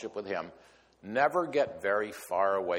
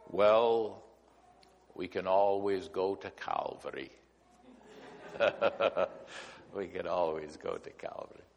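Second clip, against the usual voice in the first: put-on soft Scottish accent; 3 semitones lower, 3 dB quieter than usual. Retelling a man's reply to a joking nurse, in Jimmy's soft Scottish brogue. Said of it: "in his soft Scottish brogue".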